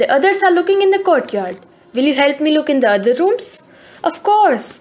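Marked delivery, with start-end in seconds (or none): none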